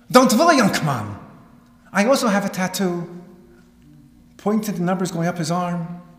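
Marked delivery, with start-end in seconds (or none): 0.1-3.2 put-on heavy Yiddish European accent laid on, louder. Quoting a man speaking to a nearly dead kid, in a heavy Yiddish European accent. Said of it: "in his heavily Yiddishy European accent".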